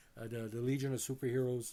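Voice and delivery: plain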